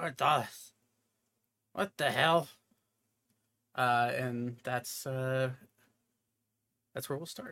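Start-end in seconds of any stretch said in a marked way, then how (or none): 0.0-2.5 muffled covered voice, faster. A game master voices someone waking up and addressing Ornthalas, muffled voice. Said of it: "you'll hear a muffled voice saying".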